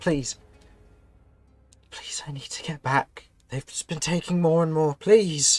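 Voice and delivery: urgent, building pleading. Voicing a caged prisoner begging a rescuer: pleading, growing louder. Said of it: "and begins speaking louder".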